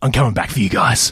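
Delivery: deep, intimidating, menacing hero voice. Showing the others how you projected your voice, do an intimidating Batman voice. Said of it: "That's intimidating".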